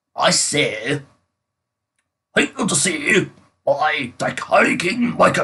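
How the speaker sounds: put-on British accent with slow, drawn-out delivery. Called over to read the opening title, a british person announces it in a british accent. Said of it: "British person, get over here".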